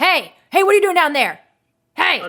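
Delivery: very loud, high, fast, booming shout. Narrating a game scene, an archer on a rock spots the player: archer shouting. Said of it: "and he shouts".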